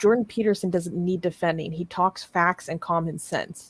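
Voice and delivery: ordinary talk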